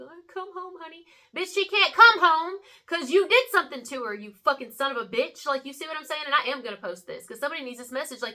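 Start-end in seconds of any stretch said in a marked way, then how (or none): 0.0-1.0 mock very high, weepy, tearful crying. Retelling a news interview plea, imitating someone crying. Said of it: "he's crying like".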